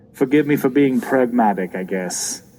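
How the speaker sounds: plain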